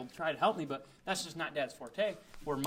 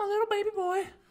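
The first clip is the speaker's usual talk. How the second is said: put-on very high, shrill, loud, babying mom voice; 6 dB louder than usual. Describing how moms baby their sons: imitating a mom. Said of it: "an impression of your mom or my mom".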